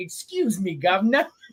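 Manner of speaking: put-on talking dog voice with a British accent. Describing a dog they saw, voicing it as british: british dog voice. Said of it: "It's like a British dog".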